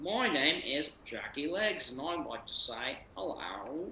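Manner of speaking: fake, put-on Canadian accent. Joking in a chat about kangaroos: put-on canadian accent. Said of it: "Great Canadian accent".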